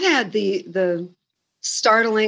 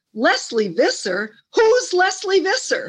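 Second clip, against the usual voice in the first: put-on very high, swooping, yelled New Yorker voice; 9 semitones higher than usual. Retelling a stranger at baggage claim reading the autograph: imitating a New Yorker yelling. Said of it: "He looked down and he yelled".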